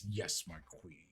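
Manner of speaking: bitter, barely managed, ground-out, near-spat words. Acting out how he says the line: mock-bitter, ground-out delivery. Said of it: "the most like bitter, ground out, barely can say it, sort of almost spitting it".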